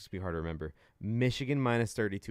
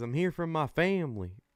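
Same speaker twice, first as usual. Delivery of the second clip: fake Southern accent, twangy and pitched up; 7 semitones higher than usual. Mock what a man from the upper northeast said on coming to LSU, imitating a fake Southern accent. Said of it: "he had that fake accent".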